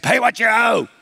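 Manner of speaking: pirate-style voice. Retelling a story, voicing the man who seized his fellow servant, in pirate voice. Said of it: "That was my best pirate impersonation".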